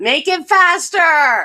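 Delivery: high, very loud shouting. Retelling how the speaker yelled at the app while waiting on an order, retelling a yell. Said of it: "I'm yelling at the app".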